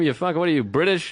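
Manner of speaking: plain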